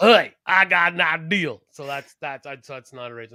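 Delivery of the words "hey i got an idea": loud, booming, very slow wrestler voice dragging every word. Relaying another man's imitation of a wrestler, in a Michael P.S. Hayes impression. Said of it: "doing an imitation of".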